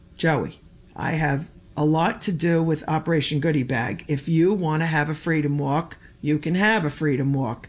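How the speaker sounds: normal talking voice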